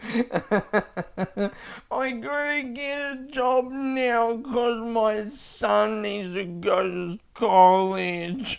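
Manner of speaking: put-on very high, slow, drawn-out babyish voice. Playing a baby whose son is older than him, Fernando baby voice. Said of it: "That's a good character".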